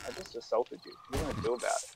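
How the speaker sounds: whispered deadpan, expressionless, dry, still, totally flat. Retelling what they said to a girl at the fry station: retelling a deadpan line. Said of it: "I just looked at deadpan".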